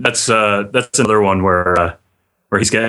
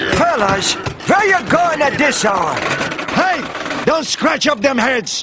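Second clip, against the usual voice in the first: put-on old man voice, yelling. Recounting a favorite line from an episode, retelling an old man's yell. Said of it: "the old man comes out and starts yelling at them".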